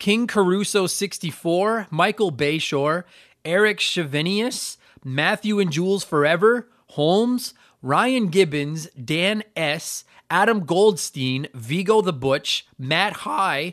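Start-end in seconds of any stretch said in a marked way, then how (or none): 12.8-13.7 voice cracking and breaking. Reading out a list of supporters' names: voice cracking. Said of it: "there's my voice crack".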